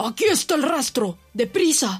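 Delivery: shouting. A farmer tracking a wild animal through tall grass shouts to his sons. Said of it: "gritó el granjero".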